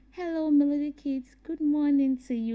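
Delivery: speaking very softly, hushed whisper. Explaining to children what whisper means, showing it in a whisper. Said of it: "when I want to whisper, I would say".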